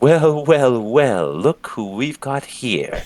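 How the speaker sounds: grinning voice. A character with a cart greets the adventurers, smiling big. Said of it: "he's smiling real big at you guys".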